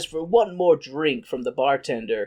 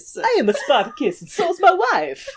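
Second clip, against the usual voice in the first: put-on Italian accent, much higher; 10 semitones higher than usual. Riffing on Spartacus with another speaker, in a terrible stereotyped Italian accent. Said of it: "terrible Italian stereotypes aside".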